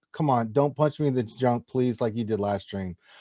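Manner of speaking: ordinary talk, nothing marked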